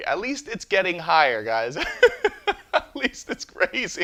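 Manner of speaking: high, loud delivery, laughing through the words.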